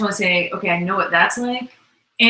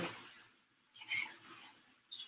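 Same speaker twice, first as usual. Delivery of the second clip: barely voiced, small whisper. Retelling asking mom for a sandwich back when shy: whispering own past words. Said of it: "I would just communicate through whispering".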